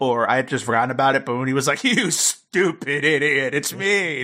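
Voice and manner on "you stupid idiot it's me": very slow, drawn-out, laughing villain taunt. Retelling a villain's reveal line, imitating a laughing villain. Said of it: "and he's just, like, laughing".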